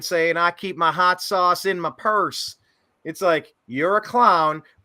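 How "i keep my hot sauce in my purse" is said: put-on Southern accent. Mocking a politician's campaign line: Hillary Clinton's put-on Southern accent. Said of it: "bringing out her Southern accent".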